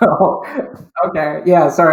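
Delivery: loud speech broken up by laughter. Answering a question about the interview process, laughing while talking. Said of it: "I'm laughing because".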